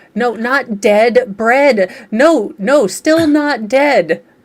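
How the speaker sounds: loud, slow yelling. Acting out talking to a watch in a store: pretend yelling at a wrist. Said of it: "Just yelling at my wrist".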